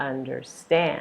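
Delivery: understand with stress on final syllable "stand". Showing where the stress falls in a pronunciation lesson: stress on 'stand' in understand. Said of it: "Stress is going to be here".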